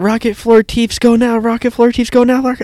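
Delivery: mock, very high, loud, repeated screaming. Retelling a movie scene where Floor is screaming: imitating Floor screaming.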